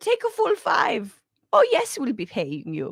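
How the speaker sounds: bad Danish accent imitation. Imitating Denmark offering very long paid parental leave: attempted Danish accent. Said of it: "That's not a Danish accent".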